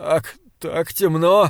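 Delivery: voice trembling, quavering. The priest answers Joshua's shouted question, in a trembling voice. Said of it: "дрожащим голосом ответил священник".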